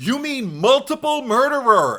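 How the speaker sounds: shrill, loud, high, slow, drawn-out delivery. Retelling a character's correction from a movie script: Jesse's voice correcting someone. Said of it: "I can actually hear it in Jesse's voice".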